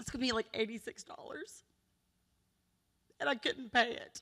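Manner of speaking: crying while speaking. Telling officials about a daughter's unaffordable prescription, crying while speaking. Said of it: "I apologize for crying".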